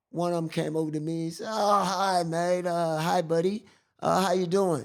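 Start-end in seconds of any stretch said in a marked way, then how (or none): 1.5-4.8 put-on American accent, loud and slow. Retelling a man who came over to greet the speaker, American accent. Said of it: "in American accent and all that".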